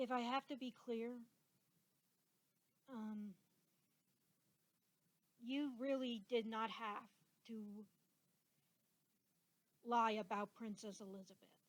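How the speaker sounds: emotional voice, choking up. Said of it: "I get a little emotional".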